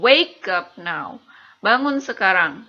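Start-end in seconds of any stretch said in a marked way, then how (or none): 0.0-1.2 first word wake hit hardest, falling end. English lesson on command intonation; stress on wake. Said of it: "Jadi yang ditekan di kata pertama".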